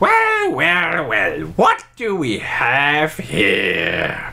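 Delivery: put-on goblin creature voice, stretched out. Narrating the scene, the speaker voices another goblin heard from inland: goblin voice. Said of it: "you can hear another goblin voice saying".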